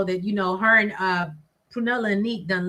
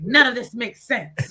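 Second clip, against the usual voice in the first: put-on, really angry, indignant tone; 4 semitones higher than usual. Retelling a partner's complaint after watching an episode: imitating someone sounding angry. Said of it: "You sound real angry".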